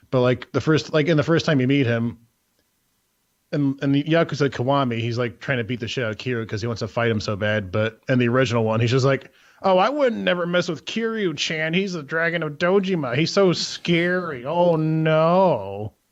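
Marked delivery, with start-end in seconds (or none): 9.6-15.8 high, very slow sarcastic drawl with "no" drawn out. Describing a game character meeting Kiryu, quoting him: retelling a sarcastic line. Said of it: "Kind of like a sarcastic way".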